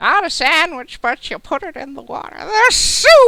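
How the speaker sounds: put-on old woman character voice. Repeating a line as the old woman character for the others: old woman character voice. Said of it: "That was so good".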